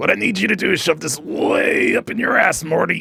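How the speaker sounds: very high, creaky, rough cartoon-scientist voice. Showing the line he uses to get into the Rick voice. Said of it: "the trigger that I use to get into the Rick voice".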